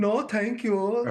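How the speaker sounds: high-pitched bad Swedish accent. Retelling how women at a table turned down a man, in a bad Swedish English accent. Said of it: "That was a horrible one".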